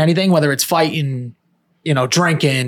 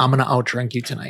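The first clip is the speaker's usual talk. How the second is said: acted dead-serious tone; 4 semitones lower, 6 dB quieter than usual. Retelling a night out, quoting a girl's challenge to the speaker, mock dead-serious. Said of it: "looking at me dead serious in the face".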